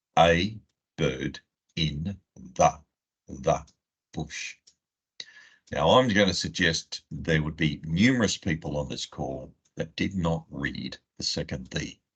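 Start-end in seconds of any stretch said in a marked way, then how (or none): 0.2-4.6 very slow, one word at a time. Reading a phrase aloud for people on a call, very slow, one word at a time. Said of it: "read it out really slowly, one word at a time".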